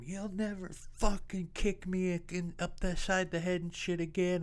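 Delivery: put-on screaming, shrill, very high-pitched. Retelling screaming at a man who had just gotten home, reenacting the scream. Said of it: "i'm screaming at him".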